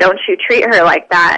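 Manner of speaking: ordinary talk, nothing marked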